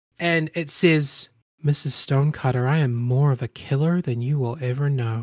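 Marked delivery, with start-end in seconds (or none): 1.6-5.3 quiet, low half-whispered voice. Narrating a game, the speaker voices a figure speaking into the listener's head: half-whispered voice in your head. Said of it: "like whispered, but sent to you".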